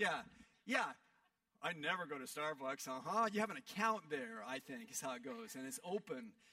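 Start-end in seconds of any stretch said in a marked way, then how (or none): 1.6-2.9 playful, joking put-on sarcastic tone. Joining the audience's joke about coffee shop visits: joking sarcastic denial. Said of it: "we're gonna do sarcasm tonight".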